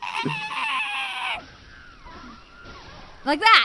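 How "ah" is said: very high, shrieking, cat-like scream. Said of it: "Like that. That's what he sounds like".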